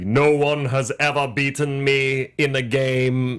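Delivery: very slow, drawn-out, ominous delivery. Describing the character early in the movie: ominous Death voice. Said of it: "more just, like, ominous".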